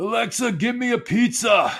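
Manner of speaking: put-on very high, slow, drawn-out drunken holler. Imitating drunk people ordering from a smart speaker: imitating drunk people yelling. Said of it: "yelling at their Alexa".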